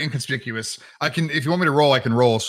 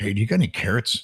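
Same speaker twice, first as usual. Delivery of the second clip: quiet, hushed, close, sidling dealer-style voice; 3 semitones lower than usual. Retelling walking up to someone to ask for carrots: quiet, drug-dealer-style ask. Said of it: "You can picture it real close and quiet".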